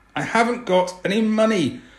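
very high, loud, forced through clenched teeth. Narrating Marta, in pain, answering Aisha: through gritted teeth. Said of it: "through gritted teeth".

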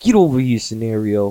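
heavy New York accent, laid on thick. Showing how he'll call his future kid over, in a strong New York accent. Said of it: "I'm gonna be real fucking New York".

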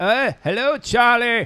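put-on high-pitched Maine fisherman accent. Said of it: "What do they sound like? That".

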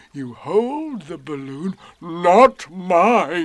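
self-satisfied, slow, loud. Answering about his balloon, a character speaks proudly. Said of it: "said Eeyore proudly".

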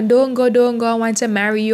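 ordinary talk

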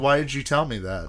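ordinary talk, nothing marked

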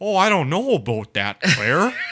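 loud, cheap-sounding Canadian voice-actor delivery. Joking about a zombie game's cheap voice acting, doing a Canadian voice actor impression. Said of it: "the fucking Canadian voice actors".

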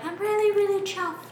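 very high-pitched, daintiest, delicate voice. Speaker quotes the astrophysicist being discussed, saying it in his voice: dainty voice impression. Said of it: "you have to say it in his voice".

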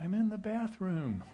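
put-on tiny, small, high little child voice. Recalling hide and seek, the speaker quotes the child answering in Jojo's tiny little voice. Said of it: "this tiny little voice comes".

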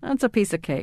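normal talking voice

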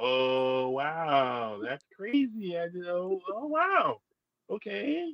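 play-acted, very high, very slow, drawn-out astonishment. Retelling how interviewers react on meeting the speaker: imitating surprised interviewers. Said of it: "they're so surprised".

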